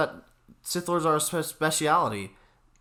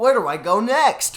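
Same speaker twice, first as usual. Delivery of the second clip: put-on high, loud, slow cartoon kid voice. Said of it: "Dora would be like".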